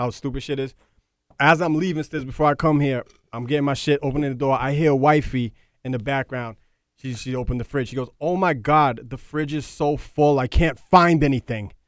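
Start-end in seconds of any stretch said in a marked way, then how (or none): 8.2-11.6 slow, put-on annoyed, pissed-off tone. Retelling his wife's complaint about the full fridge: imitating an annoyed complaint.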